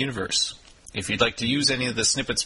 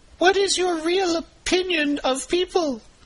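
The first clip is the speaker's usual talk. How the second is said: very high, pitched-up character voice; 3 dB louder than usual. Doing two voices in an interview with god, ask in a higher-pitched voice. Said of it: "the higher pitch voice will be Louis".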